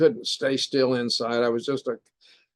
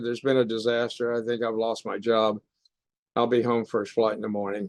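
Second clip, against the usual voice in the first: mock, very defeated, sick-at-heart tone; 2 semitones lower, 3 dB quieter than usual. Retelling a phone message he left after a disaster: retelling in a defeated tone. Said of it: "I just said in a very defeated tone".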